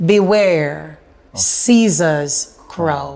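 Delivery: slow, deliberate phrasing, each word laid out. Repeating a teacher's life lesson so it sinks in: said slowly. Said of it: "Let me say it slowly".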